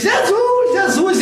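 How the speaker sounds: loud shouting.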